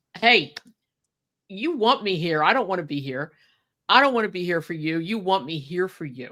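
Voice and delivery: swooping, sarcastic, cocky wrestler persona, taunting. Imagining the other speaker walking around the ring: imitating a sarcastic wrestler persona. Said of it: "I could see you walking around the ring like".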